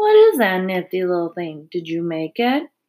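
plain

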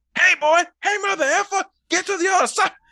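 loud, very high-pitched voice. Imagining another actor playing Morpheus: Samuel L. Jackson voice. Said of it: "Samuel L. Jackson".

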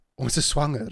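super excited, thrilled, bursting voice. Retelling how Nadine announced the pregnancy in Afrikaans: imitating Nadine's super excited voice. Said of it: "with this super excited voice".

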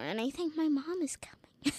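gentle whisper without voice.

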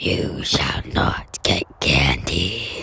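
spooky, creepy, breathy whispered voice. Retelling what a doorbell speaker said to the kids, in a creepy voice. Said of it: "this creepy voice".

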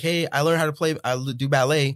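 mock sarcastic boastful delivery. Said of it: "do it sarcastically".

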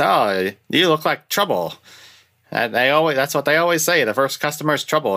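high radio-announcer patter, selling tone. Describing a side character at the car shop, doing California Charlie radio-announcer voice. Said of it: "He's got like this radio announcer voice".

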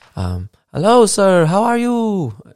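put-on Spanish accent, high, slow, sing-song, drawn out.

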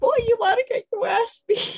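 shrill, very high scream. Reenacting a TikTok skit, the speaker runs up in the partner part: screaming. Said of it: "I run up screaming like".

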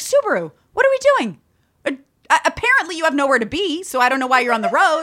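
play-acted, snide, sarcastic ranting tone. Retelling what they say to other drivers on the road, own sarcastic rant. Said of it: "it's sarcastic".

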